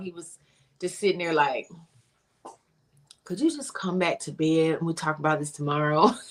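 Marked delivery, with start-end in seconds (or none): 3.2-6.1 acted laid-back, totally chill, calm, unbothered tone. Speaker retells him staying calm while she was screaming, imitating a chill calm tone. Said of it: "he was genuinely on chill the whole time".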